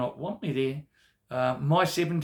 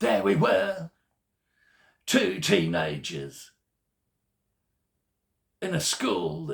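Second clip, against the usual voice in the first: put-on fruity storyteller voice; 5 semitones higher than usual. Telling a school story as Sam Hunt would: Sam Hunt fruity voice. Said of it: "it would probably go like this in his fruity voice".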